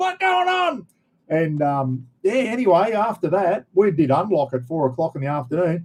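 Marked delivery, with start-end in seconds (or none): 0.0-0.9 very high-pitched yelling. Retelling prisoners in their cells as the building rocked: imitating prisoners yelling. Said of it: "fucking yelling out".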